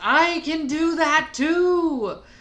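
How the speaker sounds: very loud, booming call. A player's character answers a loud challenge in the palace, in a loud voice. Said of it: "makes her voice loud too and says".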